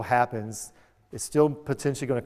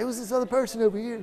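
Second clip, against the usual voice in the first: mock quick blaming tone, higher pitch; 10 semitones higher than usual. Imitating an audience member quickly shifting blame: imitating someone blaming fast. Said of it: "she's blaming on her, like, really fast".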